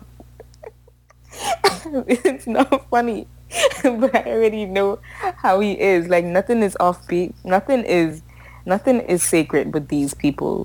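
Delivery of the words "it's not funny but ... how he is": pitched-up laugh through the words. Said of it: "I didn't mean to laugh".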